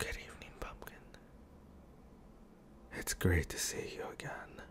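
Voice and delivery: gentle, tender, very quiet whisper. Character greets a loved one who has brought cake, tender.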